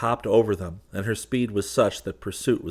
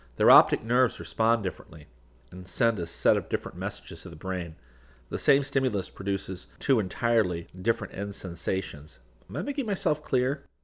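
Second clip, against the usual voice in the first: plain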